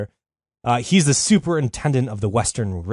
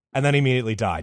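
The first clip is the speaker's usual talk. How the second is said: ordinary talk, nothing marked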